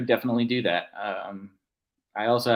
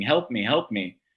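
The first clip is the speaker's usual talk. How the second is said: plain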